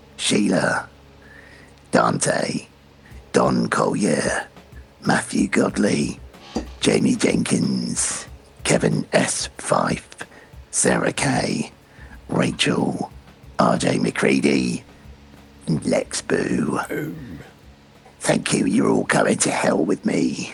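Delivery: very low, swooping demon voice, sinking very deep. Thanking the show's patrons by name, in a Ralph Ineson demon voice. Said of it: "in my best Ralph Ineson demon voice".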